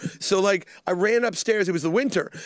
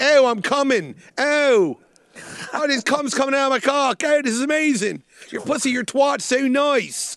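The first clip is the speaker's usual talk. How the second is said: bad, horrible put-on Philly accent, pitched up; 6 semitones higher, 4 dB louder than usual. Acting out what a man says during sex, in a horrible philly accent. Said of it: "That horrible Philly accent".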